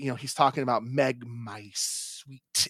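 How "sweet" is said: over-enunciated, over the top, heavy stress on "sweet". Act out the movie character talking about Meg, really enunciating "sweet". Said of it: "he really enunciates the sweet part".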